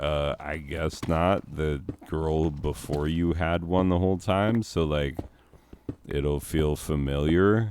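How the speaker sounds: ordinary talk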